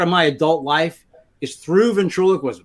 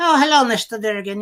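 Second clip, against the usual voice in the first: higher-pitched ventriloquist dummy voice; 5 semitones higher than usual. Showing off a ventriloquist dummy someone gifted him, speaking in Charlie's voice. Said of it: "So that was Charlie's voice".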